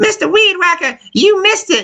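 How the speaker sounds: put-on very high-pitched, creepy old woman voice. Retelling what an old woman called out while landscaping: imitating a creepy old woman. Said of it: "That's exactly what she sounds like".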